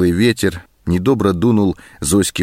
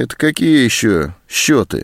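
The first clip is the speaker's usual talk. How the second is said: snide, slow, pitched-up needling tone; 5 semitones higher than usual. A sergeant snidely questions a man protesting at being tied up. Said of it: "ехидно поинтересовался сержант".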